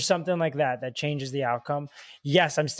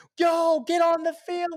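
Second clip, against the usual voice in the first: very high, drawn-out scream; 3 dB louder than usual. Retelling a teammate screaming at players to take the field: imitating Marcelo screaming. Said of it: "Marcelo's screaming".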